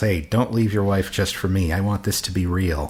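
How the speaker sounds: normal talking voice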